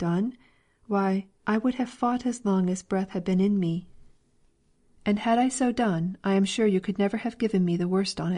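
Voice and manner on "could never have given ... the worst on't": plain reading voice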